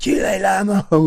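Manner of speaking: mock, shrill, very high screaming in Cantonese. Retelling a man chasing another down the stairs: imitating a screamed Cantonese insult. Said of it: "he's screaming".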